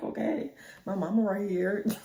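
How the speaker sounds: put-on laughing while talking. Retelling when a guy came to the door with their mom nearby; retelling laughing while talking. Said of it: "like laughing".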